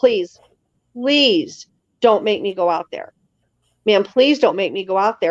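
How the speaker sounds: put-on terrified, frightened tone. Speaker retells a man bursting into the house begging, imitating a terrified plea. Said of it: "absolutely terrified".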